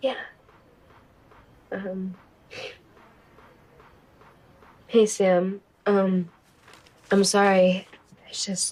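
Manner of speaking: tearful speech, crying while talking. Answering someone who asks if everything is okay: crying while talking. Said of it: "Why are you crying?".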